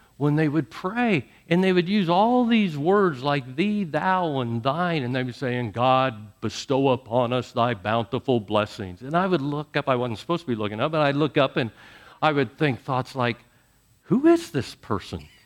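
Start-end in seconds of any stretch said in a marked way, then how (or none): 5.7-9.0 solemn put-on churchy prayer voice, low and grandly intoned. Retelling how people sounded when they prayed, imitating a God-like tone. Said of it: "they would get this God-like tone".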